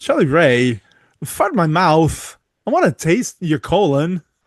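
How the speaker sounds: slow sing-song with swooping pitch. Repeating the imagined line: Christopher Walken impression. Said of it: "you do that pretty good there".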